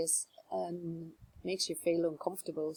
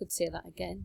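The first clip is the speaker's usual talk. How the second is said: plain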